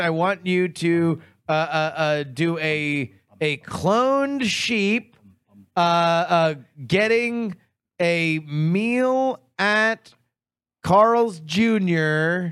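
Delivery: very slow and drawn-out.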